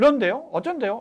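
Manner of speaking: questioning intonation. Showing how not to answer an interviewer: questioning tone, asking back. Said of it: "면접위원에게 질문하듯이".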